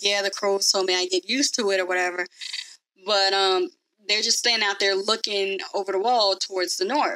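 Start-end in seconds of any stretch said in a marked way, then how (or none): none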